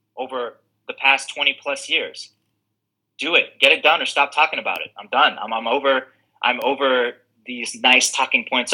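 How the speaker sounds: ordinary talk, nothing marked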